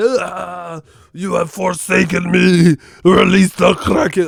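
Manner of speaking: high, loud, creaky, croaking demon voice.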